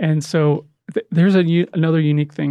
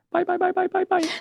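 put-on very high, cute little-girl voice; 4 dB quieter than usual. Retelling hearing a little girl call out during a film crew meeting, cute little child's voice. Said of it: "I hear this cute little voice go".

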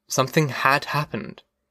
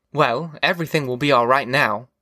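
plain

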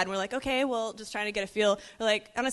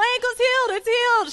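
shrill, very high, loud screaming; 14 semitones higher, 7 dB louder than usual. Retelling a woman shouting to everyone her ankle is healed: imitating someone screaming. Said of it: "she starts screaming to everyone around".

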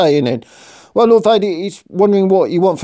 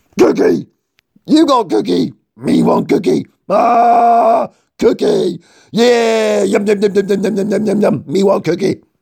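put-on hungry monster voice. In a Death Star sketch, a new commander is introduced to his lord; Cookie Monster voice. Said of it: "that's Commander Cookie Monster".

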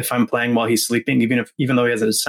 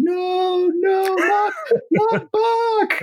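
put-on child yell, much higher and slower. Retelling how a man's son reacted to hearing Bach, imitating Bobby yelling. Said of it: "And Bobby starts yelling".

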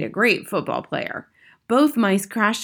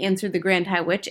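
ordinary delivery

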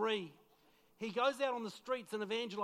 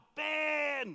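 mock panicked, high yell, name stretched out; 5 semitones higher, 4 dB louder than usual. Retelling searching a shop for a lost son: imitating yelling a name. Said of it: "just yelling out".

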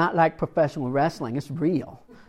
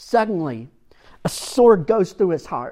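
normal talking voice

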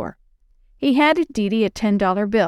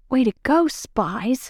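sharp, hissed voice; 3 semitones higher than usual. Dad speaks to the two girls hiding behind him, hissing. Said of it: "he hissed".

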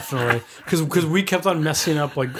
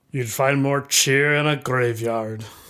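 voice dropped an octave, much lower. Performing a character's line after being told to drop the octave. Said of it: "you have to drop the octave a little bit".

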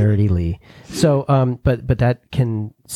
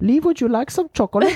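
put-on German accent, high pitch. Imitating a German mother offering chocolate: imitating mom's German accent. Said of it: "What if you heard my mom?".

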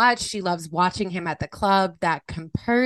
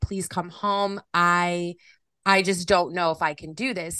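put-on crying, sobbing. Retelling a friend bawling her eyes out: imitating someone crying. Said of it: "bawling her eyes out".

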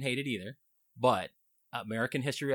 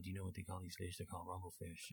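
barely audible, very quiet, low mumbling; 4 semitones lower, 16 dB quieter than usual. Retelling how a movie character talked: imitating a mumbling movie character. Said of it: "he was talking like this the whole time".

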